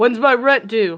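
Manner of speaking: mild projected call. In a tabletop game, a tenant answers a knock at the door: shouting through a door. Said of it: "He shouts through the door".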